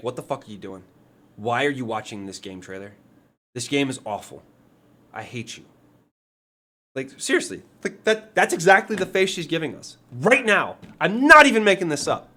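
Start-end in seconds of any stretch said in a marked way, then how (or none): 0.0-5.6 mock frustrated and angry girl voice. Voicing a girl staring at the camera in a game trailer, mock pissed-off girl. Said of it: "She's just so fucking frustrated and pissed off".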